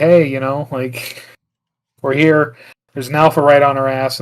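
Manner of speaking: plain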